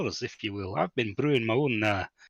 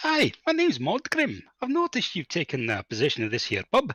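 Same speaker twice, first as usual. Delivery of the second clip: fake Scottish accent, played up, sing-song; 6 semitones higher than usual. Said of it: "Two non-Scots speaking Scottish".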